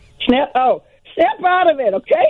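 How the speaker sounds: very high-pitched, swooping voice, every word drawn out. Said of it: "give us, there's four words. It starts with snap".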